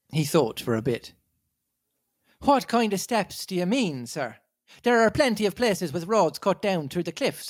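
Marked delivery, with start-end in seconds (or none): 2.4-7.5 put-on rough, plain-spoken Irish accent, pitched up. Storyteller voices a fisherman answering someone he calls sir: rough Irish fisherman accent. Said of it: "Sort of a rough Irish fisherman".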